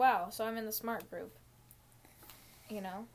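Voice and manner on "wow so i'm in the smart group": usual speaking voice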